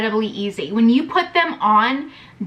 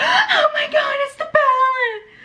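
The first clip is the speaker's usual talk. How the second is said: very high, drawn-out, thrilled screech. Retelling opening a surprise palette delivery: imitating own excited screech. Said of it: "just started screeching".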